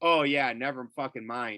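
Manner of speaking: usual speaking voice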